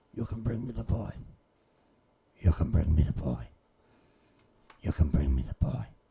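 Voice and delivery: gentle, very low croaking voice. Retelling what a figure in shadow says, gentle croaking voice. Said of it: "just kind of a gentle croaking voice say".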